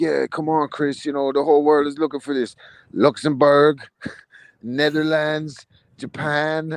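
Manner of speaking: mock drunken, slow, tipsy-sounding speech. Retelling a fighter's call-out video, imitating a drunk-sounding fighter. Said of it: "he sounded drunk to me".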